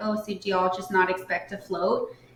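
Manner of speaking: normal talking voice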